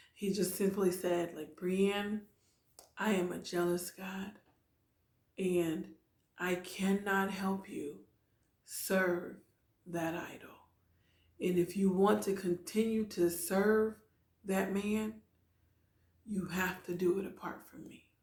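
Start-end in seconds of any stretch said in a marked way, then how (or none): 1.6-18.0 hushed, soft and tender, gentle delivery. Speaker retells God answering their prayer, soft, gentle voice. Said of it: "God very softly and gently saying to me".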